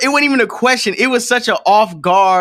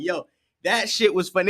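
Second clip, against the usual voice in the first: usual speaking voice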